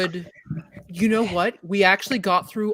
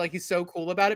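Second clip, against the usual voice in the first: plain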